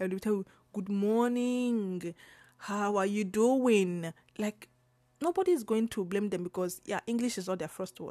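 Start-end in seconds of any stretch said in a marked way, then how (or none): 0.7-4.1 put-on Italian accent with words very slowly drawn out. Praising how Italians speak English, demonstrating a greeting in a stretched Italian accent. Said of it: "I love Italian accent because of the way they stretch".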